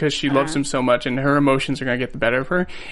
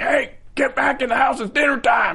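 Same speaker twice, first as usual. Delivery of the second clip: mock very high, shrill yell; 10 semitones higher than usual. Describing a scene where Jason's father calls him in, retelling the father's yell. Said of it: "he's like yelling like".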